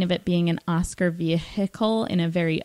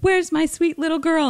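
put-on shrill, very high-pitched shout; 10 semitones higher, 3 dB louder than usual. Quoting a mother's line from a movie: imitating a shouted movie line. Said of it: "she also had a shouty line where the mom is like".

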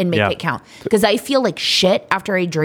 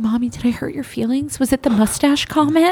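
put-on bewildered, confused little child voice, pitched up; 6 semitones higher than usual. Retelling what her child asked when she started crying, imitating a confused child. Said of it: "he's so confused".

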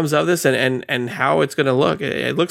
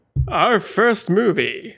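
awful, silly, higher-pitched fake put-on voice; 7 semitones higher than usual. A co-host asked about the month's first movie answers in a horrible put-on voice. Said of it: "that was a horrible voice".

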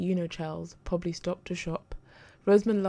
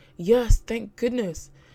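loud, grateful, relieved outburst; 4 semitones higher, 8 dB louder than usual. A man who was banging on a woman's door finally hears her answer: relieved. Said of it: "relief colouring his tone".

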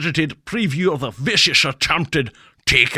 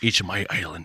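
put-on Scottish-accented voice, lower and quieter; 9 semitones lower, 7 dB quieter than usual. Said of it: "a good Sean Connery".

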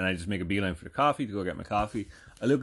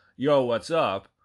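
Jersey-style accent, louder and slower delivery; 3 semitones higher, 5 dB louder than usual. Speaker showing how someone greets a whole store, in a typical Jersey-style greeting. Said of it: "In the typical Jersey style that you hear somebody go".

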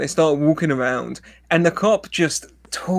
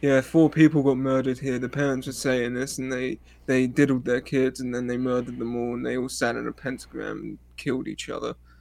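mock deadpan monotone, lower and quieter; 4 semitones lower, 5 dB quieter than usual. Imitating a cop describing murders: imitating a flat emotionless voice. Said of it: "there's no emotion to his voice ever".

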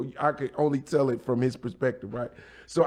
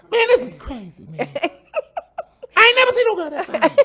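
put-on very high, loud, swooping, squeaky boy voice; 7 dB louder than usual. Speaker recalls young Chris's reaction; imitating Chris's high voice. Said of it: "his voice was so high".

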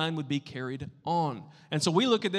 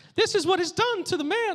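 very high, loud cartoon squeak; 5 dB louder than usual. Reading the line again after asking if it was good, sounding like Mickey Mouse. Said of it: "I sound like Mickey Mouse now".

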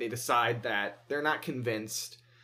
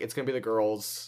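normal talking voice

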